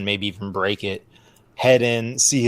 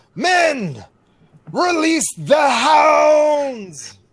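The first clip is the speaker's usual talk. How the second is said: very high-pitched, very slow, swooping shout; 3 dB louder than usual. Bluffing the bandits in character: shouting an in-character command. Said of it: "I shout".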